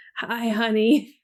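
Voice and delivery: put-on movie-hero voice with audible cracking. Retelling a favorite movie scene, Bruce Willis cracked voice. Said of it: "In his cracked voice".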